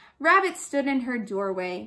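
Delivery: plain reading voice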